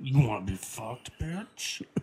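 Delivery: macho, manly voice. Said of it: "do your straight guy voice".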